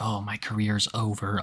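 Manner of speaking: mock mutter. Describing Daniel meeting Josh, Daniel muttering under his breath. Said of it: "under his breath".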